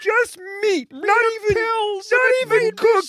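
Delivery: very high, slow, drawn-out frog-puppet voice. Showing the others how the impression should go: Jordan Peterson as Kermit. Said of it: "you gotta do a bit more of a Kermit".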